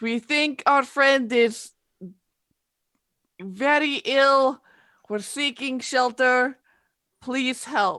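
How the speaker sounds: high, yelled call from far away. Playing a character calling out for shelter in a blizzard: yelling. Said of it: "she'll yell out".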